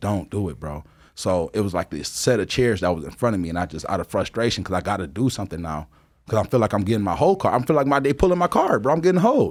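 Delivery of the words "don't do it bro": earnest, begging, pleading voice. Retelling a friend holding him back from a fight: imitating Ivan begging. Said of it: "Ivan's begging me".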